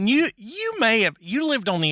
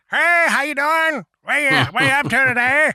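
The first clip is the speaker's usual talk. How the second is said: put-on old man voice, loud and high; 7 semitones higher, 5 dB louder than usual. Retelling how the old store worker Hank greeted everybody: imitating Hank's way of talking. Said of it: "That's how he talked".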